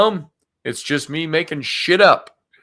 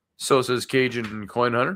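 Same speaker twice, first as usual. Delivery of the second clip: ordinary delivery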